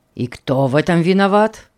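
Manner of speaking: hostile, ill-natured, unfriendly, unkind tone. A father puts a question aimed at his son, unfriendly. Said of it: "недоброжелательный вопрос".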